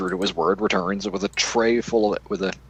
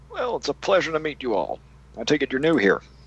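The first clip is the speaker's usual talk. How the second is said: put-on friendly old bartender voice, swooping; 6 semitones higher than usual. The tavern bartender greets travelers who just introduced themselves: old bartender voice. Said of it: "Old [name] never forgets a face. / And he grabs his tray and heads off. / the bartender".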